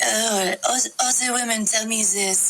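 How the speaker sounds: slow, put-on French accent with drawn-out words. Retelling a man's reply in a dorm room: french accent. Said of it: "like in a French accent".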